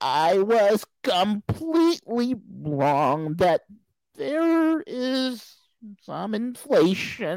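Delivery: high, very slow, mocking parody voice.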